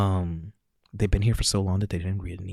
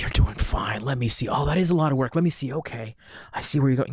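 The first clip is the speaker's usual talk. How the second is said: acted, endlessly optimistic cheery upbeat tone, pitched up; 6 semitones higher than usual. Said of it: "this infinite optimism".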